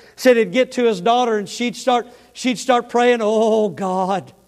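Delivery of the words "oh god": put-on quaking, trembling, serious, earnest voice. Retelling a man's story of his daughter starting to pray, imitating a quaking, serious prayer. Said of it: "that quaking of the voice".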